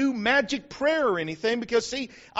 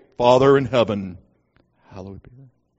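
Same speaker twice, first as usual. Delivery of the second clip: deep, very low, solemn praying voice; 13 semitones lower, 7 dB louder than usual. Imitating people leading a prayer from the platform, lower prayer tone. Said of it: "they pray with a little bit lower tone than they usually pray".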